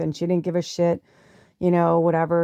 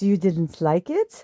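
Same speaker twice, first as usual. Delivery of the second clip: put-on thick German accent. Quoting a woman who got quiet, in a thick German accent. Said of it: "she had a very sh- like thick German accent".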